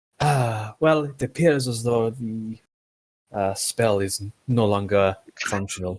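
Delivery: mildly, faintly disappointed tone. A player voices their character in a game, almost disappointed. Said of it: "give out an almost disappointed".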